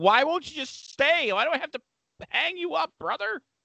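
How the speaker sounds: mock, very high yell. Retelling struggling to set up an old monitor: retelling yelling at a monitor. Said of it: "I'm yelling at it".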